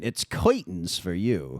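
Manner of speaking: put-on swooping, old-time twenties gangster voice. Retelling what the barber kept saying while cutting hair, 1920s gangster impression. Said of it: "doing an impression of a twenties gangster".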